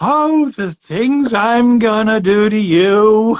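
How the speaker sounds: high, very slow cartoon voice, "you" stretched out. Retelling what you said while looking down at a guy, Ren and Stimpy voice. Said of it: "channeling my best Ren and Stimpy voice".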